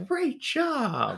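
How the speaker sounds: very high-pitched praising tone with "job" drawn out. Quoting a toddler TV host asking viewers questions: Blippi voice. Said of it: "where he asks questions and talks back".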